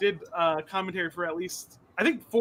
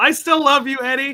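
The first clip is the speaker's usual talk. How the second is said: eager, high-pitched, loud yell; 8 semitones higher, 8 dB louder than usual. Retelling yelling over the barrier at a booed wrestler as a child: retelling a yell. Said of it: "I yelled".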